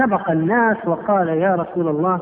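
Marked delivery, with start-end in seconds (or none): none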